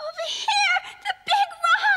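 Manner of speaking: loud yelling, shouting. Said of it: "I've never shouted so much in my life!".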